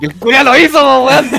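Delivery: high-pitched, loud outburst of hard laughter.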